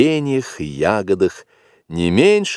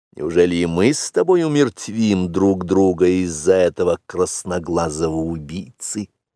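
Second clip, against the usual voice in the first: plain reading voice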